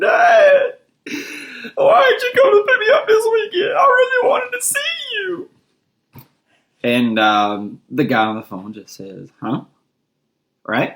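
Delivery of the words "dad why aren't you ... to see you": mock sobbing in a very high-pitched voice. Retelling calling Dad and a stranger answering, retelling crying on the phone. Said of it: "crying and everything".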